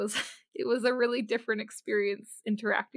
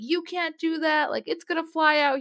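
acted-out angry telling-off, high and shouted; 7 semitones higher, 5 dB louder than usual. Retelling how a man yelled at the speaker in front of everyone; retelling a yell. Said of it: "he was like yelling at me".

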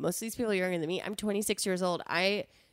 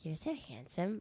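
eerie tiny voice, very hushed, barely audible; 9 dB quieter than usual. Showing the line used on a guy: creepy little voice. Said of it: "I say it in that creepy little voice".

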